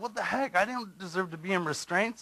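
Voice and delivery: indignant, angry yelling and screaming. Recounting being put in restraints, reenacting yelling and screaming in protest. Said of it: "I'm yelling, I'm screaming".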